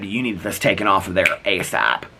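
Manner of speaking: ordinary talk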